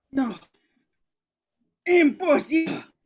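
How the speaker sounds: hoarse, croaking voice. Narrator reading the bloodied fixer's words to himself, croaking. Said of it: "He croaks to himself".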